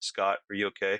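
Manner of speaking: mock utterly laid-back, easy, mellow calm tone. Retelling how a friend asked someone after a scream, imitating a mellow, calm voice. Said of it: "in the most mellow, calm voice".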